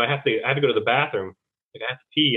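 ordinary talk, nothing marked

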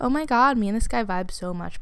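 ordinary talk

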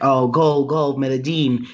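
usual speaking voice

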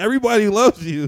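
put-on sloppy, drunken, very high and very loud yell. Retelling how Smarty was drunk yelling at him: imitating Smarty drunk yelling. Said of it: "Smarty was drunk yelling at me".

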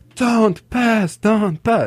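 acted, very high, drawn-out, stretched yell. Retelling a match where the opponent's coach shouted: imitating a coach screaming. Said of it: "his coach was screaming".

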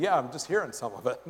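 wry, amused, laughing aside with wide pitch range.

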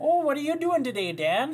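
very high-pitched, loud Minnesota accent. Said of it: "with a Minnesota accent".

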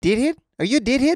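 high New Zealand accent, "deadhead" sounding like "did hit".

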